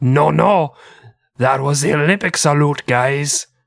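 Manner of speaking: put-on English with French accent. Retelling what the French team later claimed about the salute: French accent. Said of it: "That's my French".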